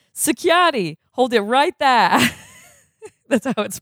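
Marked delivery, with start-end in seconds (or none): 0.2-2.2 put-on Boston accent, pitched up. Voicing a security guard character's line in a Boston accent. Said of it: "Is that the Boston accent?".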